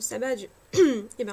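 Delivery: choking while speaking. Partway through explaining something, the speaker starts choking mid-sentence. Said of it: "je m'étouffe".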